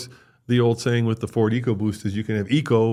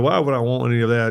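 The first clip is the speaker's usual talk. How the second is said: put-on Southern US accent. Quoting people put off by the word hybrid, slipping into a southern accent. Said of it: "I don't mean to be doing a southern accent".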